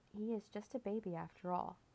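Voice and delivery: ordinary delivery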